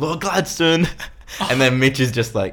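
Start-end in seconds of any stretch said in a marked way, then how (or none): 0.0-0.9 mock, high-pitched screaming. Speaker retells how they sound phoning the Gladiator for a booking, retelling screaming into the phone. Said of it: "you're screaming through the phone like".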